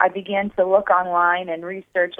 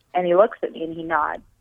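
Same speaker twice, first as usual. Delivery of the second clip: normal talking voice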